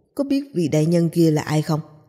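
ordinary delivery, nothing marked

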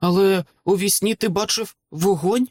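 stuttering speech. A narrator reads a young man's question about a dream, stammering. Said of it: "затинаючись, промовив Джаїр".

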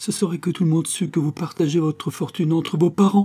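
high, trembling, quavering outcry. Suspected by her aunt, a niece cries out to her, exclaiming in a trembling voice. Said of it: "s'écria-t-elle d'une voix tremblante".

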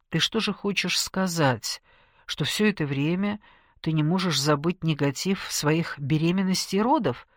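plain reading voice

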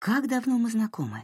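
gentle, very high-pitched. A woman speaks softly to another woman. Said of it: "мягко сказала Марин".

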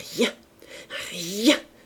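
stuttering, faltering, stammering speech. A woman reading a letter while two girls watch her, stammering. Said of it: "bégaya-t-elle".

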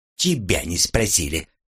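plain

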